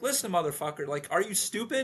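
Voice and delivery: harsh, hard scolding tone. Imitating a character getting tough with his boys: imitating a harsh scolding. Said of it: "take a harder hand and be like".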